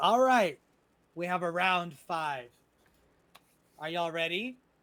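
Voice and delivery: very loud goblin character voice. Voicing a goblin at the pier who asks if everyone is ready: goblin voice. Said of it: "and the goblin says".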